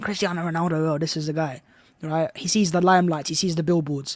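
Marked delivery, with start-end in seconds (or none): 0.0-2.3 soft, quiet, casual put-on American accent. Speaker acts out a club owner spotting Ronaldo, Todd Boehly American accent. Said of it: "in his American accent".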